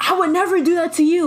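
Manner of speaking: acted, high, mild half-shouted yell. Retelling a boyfriend's phone call to his girlfriend: imitating someone yelling. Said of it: "He was just yelling at her".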